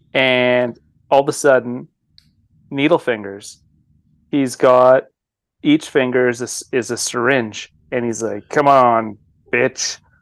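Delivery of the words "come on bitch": put-on horror-movie slasher villain voice. Retelling a movie scene where the slasher with needle fingers taunts her: Freddy voice. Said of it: "I had to get my Freddy voice queued up".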